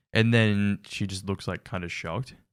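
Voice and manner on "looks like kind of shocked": ordinary talk, nothing marked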